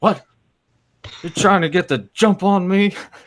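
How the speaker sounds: put-on groggy annoyance. Retelling a man woken by an early-morning prank call, imitating half-asleep anger. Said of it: "Like just half asleep, just really just pissed off".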